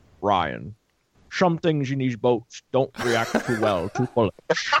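put-on Scottish accent. Show the others the voice you can kind of do, a Sean Connery impression. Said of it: "Here's my Sean Connery".

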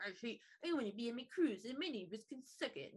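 put-on whining bratty child voice. Retelling a story, the speaker voices a man sitting alone at his kitchen table: imitating a whiny brat. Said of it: "sitting like a little whiny brat".

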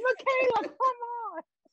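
put-on shout. Retelling rooting for a contestant while watching, imitating own screaming at tv. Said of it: "I was literally screaming at my T V".

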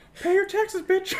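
shrieking high and at full volume. Joking about Mickey Mouse knocking to collect money, South Park Mickey Mouse voice. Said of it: "It's just Mickey Mouse from South Park".

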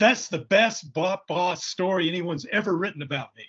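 excited, high-pitched, bubbling-over gushing. Speaker retells a man reacting to the story written about him, mock-excited. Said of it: "he's all excited".

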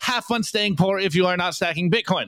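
ordinary talk, nothing marked

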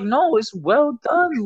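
mock unbothered, very slow. Retelling how he answered her complaint, retelling a calm reply. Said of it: "not raising his voice at all".

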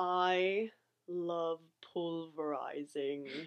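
put-on British accent, a bit stronger. Told to sound more British, the speaker tries the line again, more British accent. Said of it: "A little more British".

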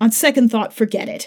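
usual speaking voice

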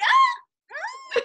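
very high, loud jump up an octave. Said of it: "The octave of my voice is like".

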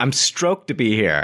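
play-acted, overwrought, worked-up declaring tone. Teasing a friend, imitating Joe getting worked up. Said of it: "Joe's gonna get himself so worked up".

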